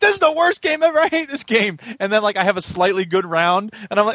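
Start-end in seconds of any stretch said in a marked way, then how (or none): 0.0-1.8 high, frustrated, play-acted rage in griping outburst. A player describes swinging between moods in a game, retelling own gaming rage. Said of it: "The rage was real".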